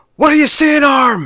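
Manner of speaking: very high-pitched, loud shouted yell. Quoting a favourite film line: imitating Chris O'Dowd yelling. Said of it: "Chris O'Dowd just yells out".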